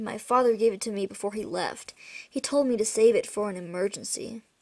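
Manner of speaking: usual speaking voice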